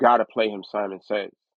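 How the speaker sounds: ordinary talk, nothing marked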